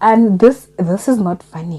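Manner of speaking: choked, tearful voice on the verge of tears. Reacting to a hurtful story read aloud, tearing up. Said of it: "I'm tearing up".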